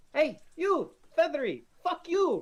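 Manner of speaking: very high, very slow, loud, drawn-out screaming. A character screams at a feathery bird: screaming insults at the bird. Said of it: "Pandora's just screaming at the bird".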